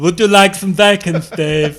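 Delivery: very loud, high pig voice, South European accent. Joking about a future pig with a human brain, addressing Steve as South European accented pig. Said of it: "Kind of like a South European pig".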